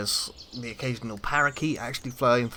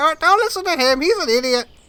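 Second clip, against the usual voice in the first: put-on parrot voice, much higher pitch; 4 dB louder than usual. Narrating a game, a second parrot flies down and speaks: talking parrot voice. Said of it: "a second parrot flies down next to the first one".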